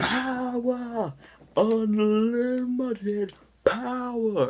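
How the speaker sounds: shrill, loud shriek, dragging out "power". Quoting the character's most infamous line: imitating Palpatine shouting. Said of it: "his most infamous line".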